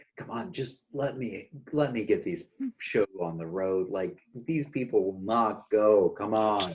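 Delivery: soft, hushed half-whisper, aside tone. Playing a character who half-whispers up to her to hurry things: half-whispering. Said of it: "whisper up to her".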